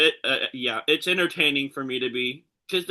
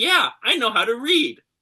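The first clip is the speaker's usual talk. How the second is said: put-on sarcastic smart-aleck voice, higher pitch; 8 semitones higher than usual. Retelling a sarcastic reply to a park monster actor: retelling own sarcastic reply. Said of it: "kinda being a smart ass with him".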